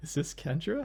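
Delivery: put-on young man's voice on the brink of cracking up laughing. A caller on the phone asking for someone, on the verge of laughing. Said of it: "sounds like on the eve of like bursting out laughing".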